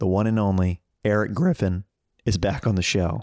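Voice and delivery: voice cracking and breaking. Host introducing the returning guest on the show, voice cracking. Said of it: "Why did my voice crack?".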